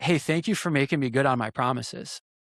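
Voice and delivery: put-on emotional, choked-up voice. Retelling what a father said on the phone: imitating a choked-up voice. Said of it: "he gets choked up a little bit".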